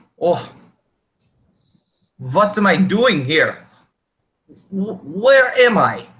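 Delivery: put-on bewildered, lost, high ghostly old man voice. A startled ghostly old man looks around and turns to you, confused. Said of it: "turns to you as if confused".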